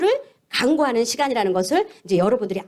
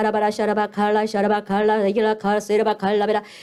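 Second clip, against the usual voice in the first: still, calm, gentle, flowing stream of babble; 3 semitones lower than usual. Demonstrating tongues when the spirit of wisdom comes, calm and gentle tongues. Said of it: "잔잔하게".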